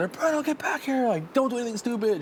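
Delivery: high, hollering yell, called out far. Recounting his wife calling to him from backyards away, retelling his wife's yell. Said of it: "she's like yelling".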